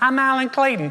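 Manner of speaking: thin, high, squeaky put-on little voice. Acting out someone introducing themselves when things get difficult: high squeaky voice. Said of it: "with a high squeaky voice going".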